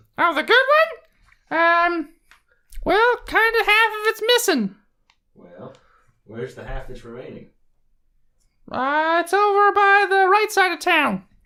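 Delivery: very high-pitched, loud gnome character voice.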